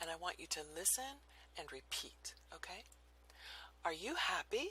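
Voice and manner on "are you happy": questioning tune climbing upward on "happy". English lesson on yes-no questions, rising pitch on happy. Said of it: "Yes-no questions have a rising pitch, like this".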